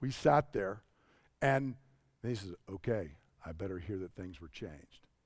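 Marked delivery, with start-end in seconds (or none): 2.7-5.1 calm, low, very soft, never raised voice. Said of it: "Never raised his voice".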